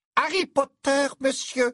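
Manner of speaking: very high, small, squeaky cry. Reading a novel aloud, the narrator voices Dobby answering Harry, in Dobby's small high voice. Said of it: "s'écria Dobby de sa petite voix aiguë".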